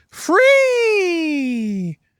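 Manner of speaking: free flung out way high, soaring. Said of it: "Or as I say".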